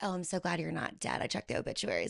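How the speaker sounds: soft, play-acted, quippy tongue-in-cheek snark. Retelling a message sent when the guy resurfaced: imitating own snarky quip. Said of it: "I had that snarky little".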